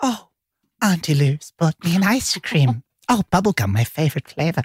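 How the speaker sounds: put-on chattering voice of a five-year-old boy. Retelling what five-year-old Finn says at Vi's house, imitating Finn's little-boy voice. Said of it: "That's how he talks".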